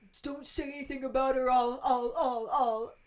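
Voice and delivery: stuttering, stammering over repeated I'll. Recapping a book scene, imitating Ron stuttering. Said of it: "Ron stutters as he's trying".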